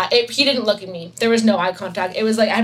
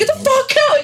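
put-on shout, higher; 3 dB louder than usual. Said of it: "he yelled".

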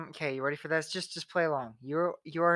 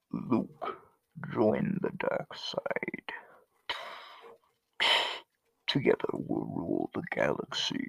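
muffled put-on villain impression; 10 semitones lower, 3 dB quieter than usual. Friends take turns doing iconic impressions; muffled Darth Vader impression. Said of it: "because I was covering my mouth".

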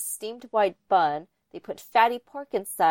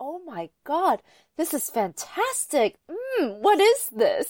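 awestruck, gushing, amazed, high and swooping; 8 semitones higher than usual. Retelling a man eating gua bao for the first time, imitating someone amazed. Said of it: "In that exact tone of voice".

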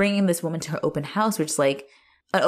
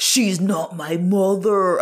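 put-on aggressive yell, much slower; 4 dB louder than usual. Recapping how Arthur yells at her, imitating Arthur's aggro yell. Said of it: "he sounds real like aggro when he's like".

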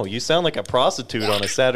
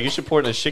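ordinary talk

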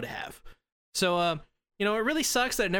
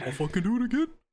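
animated bear character voice; 5 semitones higher than usual. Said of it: "You sounded like more Yogi than anything".

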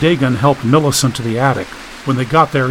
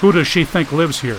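usual speaking voice

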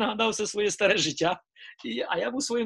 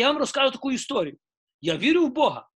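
acted-out fired-up man's voice; 4 semitones higher, 4 dB louder than usual. Retelling what a man said when asked if he was a believer, retelling a fired-up man. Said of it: "він так запалився і каже".

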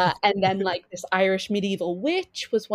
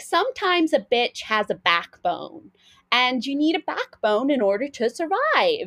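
sassy, swooping motherly voice, talking back; 4 semitones higher than usual. Retelling what the speaker's mum said, imitating a sassy mum. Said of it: "she literally talks like this".

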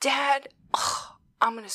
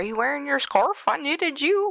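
high, cartoonish, dog-like voice; 6 semitones higher, 4 dB louder than usual. Retelling a movie scene, quoting Goofy asking Max about the scarf: Goofy impression. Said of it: "Perfect Goofy impression".

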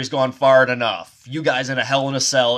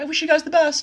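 camp, effeminate, very high-pitched voice. Acting out the underdog, the only one who is nice to everybody, in an effeminate imitation of Todd. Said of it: "I don't know why I went so effeminate".

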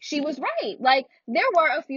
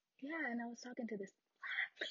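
very soft whisper on a single word. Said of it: "They whisper it".

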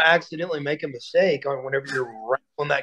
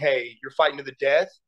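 ordinary delivery

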